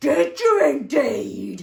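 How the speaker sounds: rough, loud, growling, stone-like rumbling voice. Narrating a story where a stone answers the fox: growly stone voice. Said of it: "said the growly voice".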